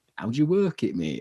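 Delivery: put-on casual tone in a Yorkshire accent. Quoting a film scene with Sean Bean behind the wheel: Sean Bean impression, Yorkshire accent. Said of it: "he's Yorkshire in that movie".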